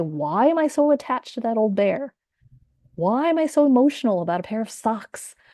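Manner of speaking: judgmental, self-critical, self-scolding tone. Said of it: "And it's very judgmental".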